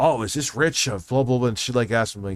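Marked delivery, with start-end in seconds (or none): 0.0-1.5 mock insistent, really pushy manner. Retelling a phone call from a debt caller: imitating a pushy caller. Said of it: "really super, like, pushy".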